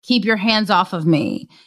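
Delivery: ordinary delivery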